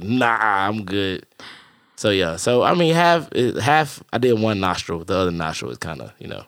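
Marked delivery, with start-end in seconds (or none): 0.0-1.3 slow, drawn-out, reluctant polite tone. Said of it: "I was like".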